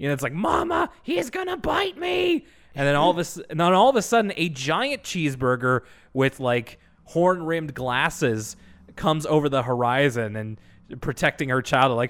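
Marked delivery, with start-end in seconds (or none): 0.3-2.4 very high, drawn-out cartoonish shriek. Retelling a cartoon where a cheeseburger cries out: imitating a screaming burger. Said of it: "and it screams".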